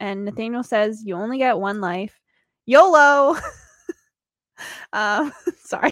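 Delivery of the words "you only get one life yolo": playful, joking delivery. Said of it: "I don't know why I said that".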